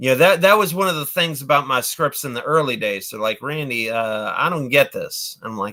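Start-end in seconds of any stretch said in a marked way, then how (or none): none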